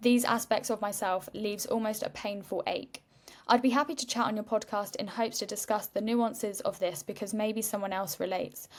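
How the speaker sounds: ordinary talk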